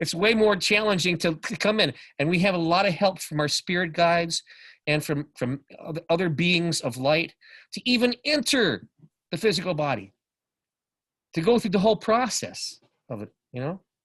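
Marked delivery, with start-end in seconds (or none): 2.2-13.8 talking through light tears, pitched up. Speaker who says they are crying just talking about this, crying a little. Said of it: "I'm crying a little bit just talking about this".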